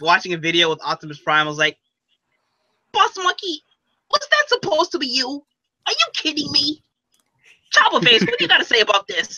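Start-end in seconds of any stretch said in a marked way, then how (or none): 2.9-9.4 very high little cartoon-rat voice. Imagining a character reacting to a video, in a Rattrap voice. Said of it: "I can imagine Rat Trap be like".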